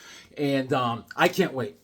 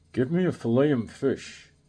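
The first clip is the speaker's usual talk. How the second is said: slow, drawn-out delivery; 5 semitones lower than usual. Doing an impression of someone ordering food at McDonald's: Charles Bronson impression. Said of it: "This is Charles Bronson in line at McDonald's ordering food".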